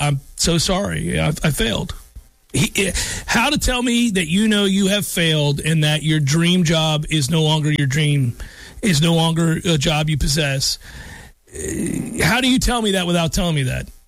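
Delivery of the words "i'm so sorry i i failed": put-on defeated, apologetic tone. Imitating the coach at a press conference: imitating a defeated apologetic tone. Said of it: "it's an apologetic tone".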